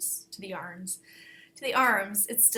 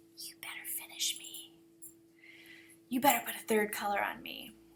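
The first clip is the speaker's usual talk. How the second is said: mean, nasty little whispered voice. Recalling the unfinished knitting in the bag urging them on, nasty little whisper voice. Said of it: "it would whisper in my ear in the nasty little voice".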